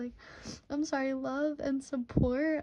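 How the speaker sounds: tearful, talking through tears. Reading messages of love and support, crying while talking. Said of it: "I am crying".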